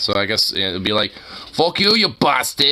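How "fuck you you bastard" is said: put-on, pitched-up Boston accent. Imagining how Boston Irish punk bands would put it, attempted Boston accent. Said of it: "the Boston accent is".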